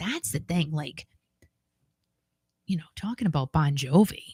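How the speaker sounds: soft hushed half-whisper with no voice behind it. Speaker confiding to listeners mid-story, half-whispering. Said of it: "I don't know why I'm whispering".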